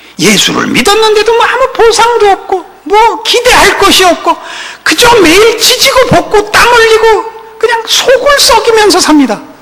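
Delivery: lamenting, wailed out high.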